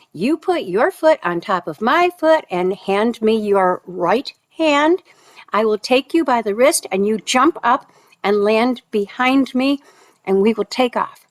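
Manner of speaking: normal talking voice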